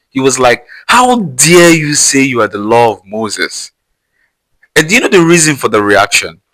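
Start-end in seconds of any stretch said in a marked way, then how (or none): 0.9-3.7 put-on outraged, angry, indignant voice. Retelling how the priest reacted to Jesus, imitating an angry priest. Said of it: "the priest reacted so angrily".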